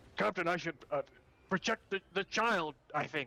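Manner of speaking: jumpy, skittish, hurried delivery. Player voices a skittish character answering the captain; skittish, quick answer. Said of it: "he's gonna kind of like be like kind of skittish".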